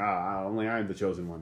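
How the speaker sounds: ordinary delivery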